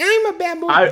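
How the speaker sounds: squeaked out very high. Retelling the doll's line from an audiobook, in an Alvin the Chipmunk voice. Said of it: "it does like an Alvin the Chipmunk type thing".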